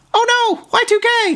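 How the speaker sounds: tiny squeaky robot voice, very high and slow. Voicing what the rocket bot says, squeaky little robot voice. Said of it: "in a squeaky little robot voice".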